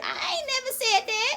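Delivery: squeaky, very high voice, drawn out. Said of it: "Voice getting squeakier and squeakier".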